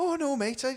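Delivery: high, wide-ranging Welsh-accented voice.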